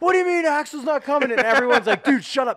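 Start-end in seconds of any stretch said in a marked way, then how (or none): 0.0-1.3 high, frantic, flipping-out yell. Retelling how they flipped out about a show, acting out a freaked-out yell. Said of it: "I'm flipping out yelling".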